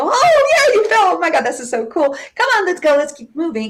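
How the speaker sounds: put-on very high, upbeat, encouraging, joyful sing-song cheer. Acting out a smiling mom encouraging her kid after a fall, mimicking a joyful voice. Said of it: "huge smile and joyful voice".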